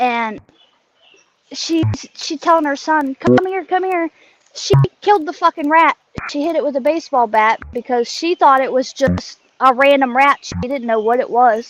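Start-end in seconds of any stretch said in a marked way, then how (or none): 3.1-4.1 acted high, shrieking scream. Retelling how she screamed to her son: imitating someone screaming. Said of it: "she's screaming and yelling".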